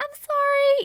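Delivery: very high, sweet, apologetic voice. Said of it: "or maybe you're a dude".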